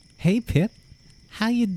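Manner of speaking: very high, slow, attempted American accent. Trying out an accent for listeners, greeting someone in a put-on American accent. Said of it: "Can you hear my American accent?".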